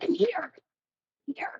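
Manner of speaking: desperate whispered pleading. Playing a character who calls the big man over: desperate.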